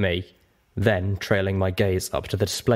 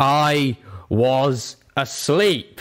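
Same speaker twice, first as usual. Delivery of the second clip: booming, thundering angry roar with regret, pitched up; 6 semitones higher, 4 dB louder than usual. Narrator reading a huge purple dragon's reply, booming with anger. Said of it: "The dragon's voice boomed with anger".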